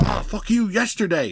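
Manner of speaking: mock furious, high, manic, raging outburst. Acting out a villain who is still mad about a past fight: imitating Kang in a rage. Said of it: "he goes from one minute of rage to one minute of rage".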